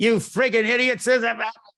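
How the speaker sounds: put-on very high, shrill, loud, angry yelling. Retelling how the old man yelled at everybody: imitating John Vigorito yelling. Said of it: "he did nothing but yell at everybody".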